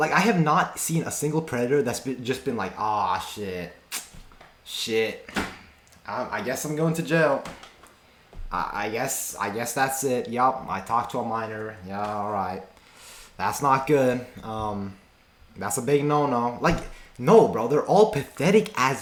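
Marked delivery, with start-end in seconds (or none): 2.8-16.6 play-acted casual, unbothered, slow nonchalant cool drawl. Imagining a predator caught by a decoy: imitating a nonchalant predator. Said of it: "nonchalant, like, cool".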